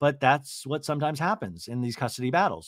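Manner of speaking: ordinary delivery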